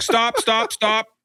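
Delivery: put-on very high, bloody-murder yelling with thick accent. Retelling how a security woman at the gate stopped him, imitating a guard yelling. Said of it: "starts yelling at me like bloody murder".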